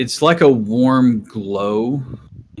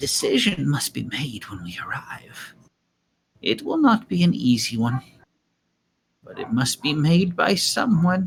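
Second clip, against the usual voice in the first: hushed, secretive half-whisper; 4 semitones higher, 5 dB quieter than usual. Voicing a character who leans forward to share something privately: half-whispering so no one hears. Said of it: "leans forward and whispers so that no one else can".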